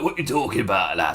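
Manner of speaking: gangster voice with Northern English accent. Showing the Northern Yakuza voice from a Twitch stream: Northern Yakuza voice. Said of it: "to kind of do the voice correctly".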